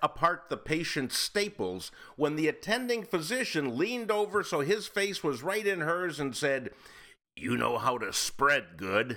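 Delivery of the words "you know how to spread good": low, natural speaking voice. Retelling what an attending physician said, leaning right into her face: imitating the attending physician. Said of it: "Did he say it like that, [name]? Is that his voice?".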